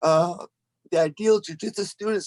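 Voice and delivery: talking through a yawn. Tired after ten rounds of training, describing the gym's students, yawning while talking. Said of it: "Sorry, I'm yawning".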